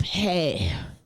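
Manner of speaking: flirtatious tone. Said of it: "hair flip".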